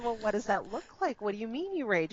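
ordinary delivery

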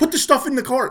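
very high, loud, exasperated, angry yelling. Retelling yelling at people who wouldn't put items in the cart: retelling a yell at staff. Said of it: "I'm like yelling at them".

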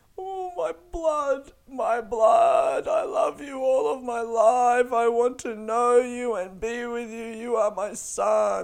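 put-on very high, drawn-out, slow babyish voice. Imagining meeting people whose language he doesn't speak, imitating Fernando as a baby. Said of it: "an imitation of Fernando if he spoke English and was a baby".

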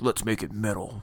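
low, very quiet, hushed villain character voice. Describing how the team got its metal name, doing a Magneto voice. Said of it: "That was a good Magneto voice".

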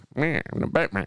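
squawking character voice.

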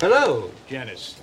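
fake posh British accent, low voice. Acting as Chandler, greeting Janice at the grocery store; Chandler's fake posh British accent. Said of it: "Are you being British?".

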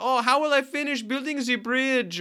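put-on speaking with a French or German accent. Quoting what he says to a co-host, in a mock French or German accent. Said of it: "maybe I'm doing actually a very accurate impression".

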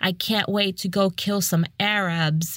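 acted-out loud delivery. Retelling what a man said at a restaurant, retelling a loud remark. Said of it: "he says it like really loud".

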